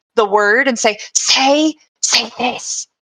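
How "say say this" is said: whispered speech. Placing an orb in someone's hands in character: whisper. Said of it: "and then whisper".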